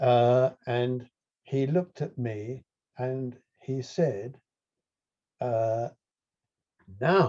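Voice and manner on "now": heavy, great stress placed on the word now. Retelling what he said while sitting on the hill: stress on NOW. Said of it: "with great emphasis on the word now".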